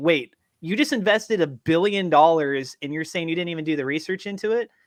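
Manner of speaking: ordinary delivery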